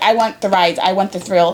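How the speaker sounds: ordinary talk, nothing marked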